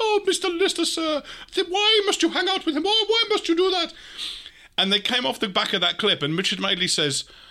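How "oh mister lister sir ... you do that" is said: very high put-on character voice. Recounting a TV clip shown before an interview, high character voice. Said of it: "having to do that high voice all the time".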